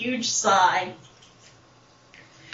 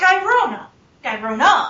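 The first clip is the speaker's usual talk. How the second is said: normal talking voice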